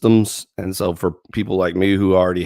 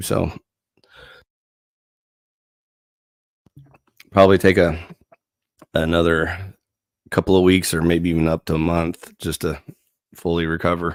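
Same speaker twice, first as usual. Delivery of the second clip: voice almost gone, barely able to talk, lower; 3 semitones lower than usual. Explaining an extended break from YouTube while sick: voice almost gone. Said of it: "my voice is almost gone".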